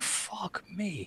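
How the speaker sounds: high, very quiet, sketchy half-whisper. Voicing a sketchy character staring at the others: half-whispering.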